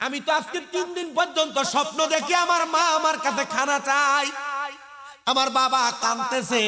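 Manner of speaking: king voice, calling out.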